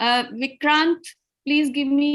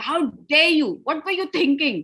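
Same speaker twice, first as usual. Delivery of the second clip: furious, angry voice. Showing how the tone changes when speaking in anger, angry. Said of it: "gusse mein".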